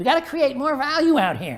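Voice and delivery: high-pitched, squeaky little-guy voice. Imitating a little guy remembered saying it: high, squeaky voice. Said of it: "He had this squeaky voice".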